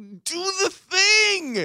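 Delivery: very high-pitched screaming with the word "thing" drawn out. Retelling how they sat screaming at the TV: imitating own screaming. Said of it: "I'm sitting there screaming at the T V".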